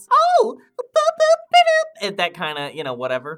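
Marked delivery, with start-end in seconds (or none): 0.1-2.1 very high, squeaky cartoon flapper voice, loud and slow. Showing how the girls in the show talk, in a Betty Boop voice. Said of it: "it's the Betty Boop voice".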